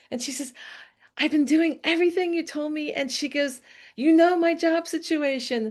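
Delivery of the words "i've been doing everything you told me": mock-excited tone, high-pitched voice. Retelling what a woman said on seeing her, imitating an excited high voice. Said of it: "She's so excited".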